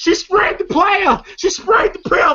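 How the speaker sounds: put-on scream, yelped out high. Retelling a movie scene where a character screams: imitating someone screaming. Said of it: "you hear Mike up screaming".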